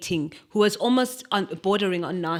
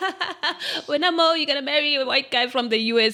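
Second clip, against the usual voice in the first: put-on, high-pitched speaking through giggles; 8 semitones higher than usual. Retelling what a friend from church used to say, imitating her laughing. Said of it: "she would say it in a laughing way".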